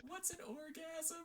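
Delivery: high, loud yelling call.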